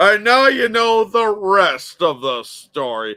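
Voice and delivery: loud, teasing, drawn-out voice. Complaining about Paul Harvey's baiting: mocking Paul Harvey impression. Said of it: "always baiting you".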